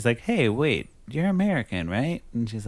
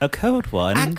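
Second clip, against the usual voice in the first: put-on British accent; 3 semitones higher than usual. Retelling how friends reply to an invitation for a cold one: British accent. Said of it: "let me do it in a British accent".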